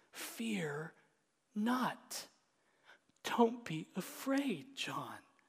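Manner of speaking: gentle, comforting, slow, tender tone. The speaker retells Jesus reassuring John, retelling tender reassurance. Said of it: "spoken with tenderness".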